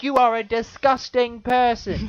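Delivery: very high, very loud, shrill, drawn-out shriek. Retelling a video where a lady accuses a man: imitating a woman yelling. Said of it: "yelling at him".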